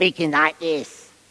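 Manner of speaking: put-on cartoon little red devil voice. Describing the cartoon picture of the devil, in a cartoon devil voice. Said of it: "speaking like the way I spoke just earlier on".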